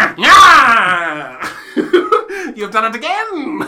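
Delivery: booming, very slow, drawn-out evil villain cackle. Doing a requested villain laugh after an imagined evil act: evil villain laugh. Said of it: "Give us your best evil villain laugh".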